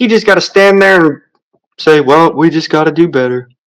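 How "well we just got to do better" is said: mock uncaring, flat, bored monotone. Imagining what he'd say at a press conference after getting paid, mock uncaring monotone. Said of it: "With a monotone of".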